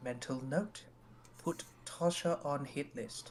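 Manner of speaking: hushed, muttered whisper. Voicing a character who turns and whispers to himself: whispering to himself. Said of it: "turns his head and whispers to himself".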